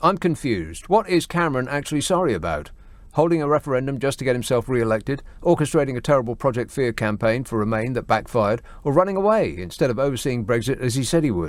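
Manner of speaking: ordinary delivery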